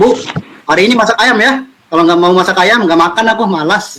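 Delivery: put-on high, rude, demanding child voice.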